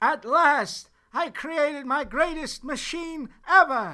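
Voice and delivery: shrill, very loud, high belting voice. Asked by the director to redo his line, the actor gives a very Christopher Lloyd-y delivery. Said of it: "a little less Christopher Lloyd-y".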